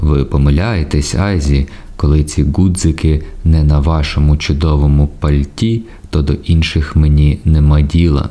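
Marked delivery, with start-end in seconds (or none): none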